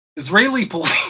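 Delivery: speaking through laughter. Reading a news headline aloud, laughing while talking. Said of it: "I can't even say it without laughing".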